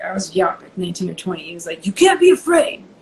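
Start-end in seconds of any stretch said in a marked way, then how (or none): 1.9-2.7 put-on pitched-up Italian accent. Retelling a story told by a man he once worked for, imitating Gino's Italian accent. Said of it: "He had an Italian accent".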